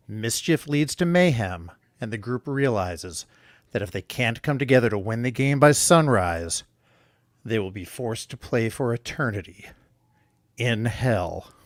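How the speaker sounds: big movie trailer narrator voiceover. Reading a story summary aloud to the others, in a movie trailer voice. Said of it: "I'll do my best uh, movie trailer attempt".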